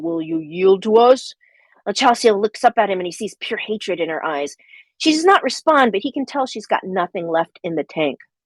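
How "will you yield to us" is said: big, slow storm giant voice. [name] questions Chelsea, in his big storm giant voice. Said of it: "in his big storm giant voice".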